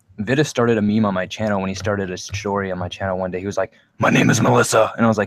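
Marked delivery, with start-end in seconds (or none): 4.0-5.0 the manliest, rugged, over-manly voice possible. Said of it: "the most manly voice he could for it".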